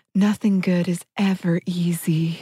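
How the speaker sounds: acted, over-the-top, thickly sincere voice. Retelling what a woman told the group, in a mock overly sincere voice. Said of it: "in the most like overly sincere voice".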